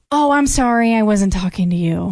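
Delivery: normal talking voice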